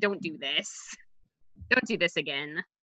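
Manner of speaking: very soft, quiet mutter under the breath. Player's character speaking only to their dog and rat, muttering quietly. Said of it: "But I'm like quietly".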